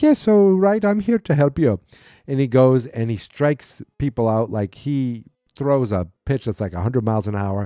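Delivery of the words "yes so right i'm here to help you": put-on Irish accent, pitched high. Retelling a story where a disguised man suddenly speaks, put-on irish accent. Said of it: "all of a sudden he's got an Irish accent".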